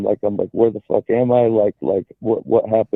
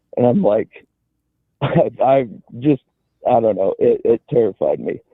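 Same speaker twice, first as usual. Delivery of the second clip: ordinary talk, nothing marked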